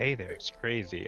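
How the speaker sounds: muttered under breath. Voicing a character greeting a nervous messenger: muttering under breath. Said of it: "I say under my breath".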